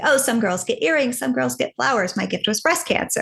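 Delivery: mock heavy sarcasm, joking. Speaker recalls a joke she often told others, retelling a sarcastic remark. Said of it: "very sarcastic way".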